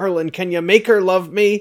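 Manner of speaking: put-on heavily marked Cornish accent. Retelling how Arthur the dweeb appeals to Merlin, speak in Arthur's very Cornish accent. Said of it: "in his very Cornish accent".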